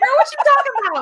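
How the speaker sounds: very high-pitched, disbelieving grandma voice. Acting out a grandma's reaction to a reading request: imitating a grandma's incredulous reply. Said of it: "she'll be like".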